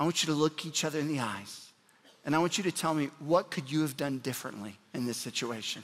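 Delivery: gentle, hushed, tender, soft, kind voice. Retelling how a mother spoke to fighting siblings: imitating a soft, quiet, kind voice. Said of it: "very, very quiet".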